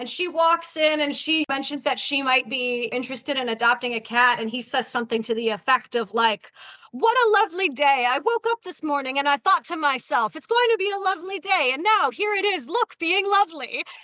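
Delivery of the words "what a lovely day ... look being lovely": relentless, gushing, over-the-top friendly salesman voice. Retelling what a pushy cat rescue guy says: imitating an over-the-top friendly salesman. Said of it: "he just talks in this, like, constant, super friendly".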